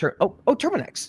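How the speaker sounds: quick rattled-off delivery. Showing how salespeople were taught to say the company name, saying the brand name fast. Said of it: "immediately you would speak fast".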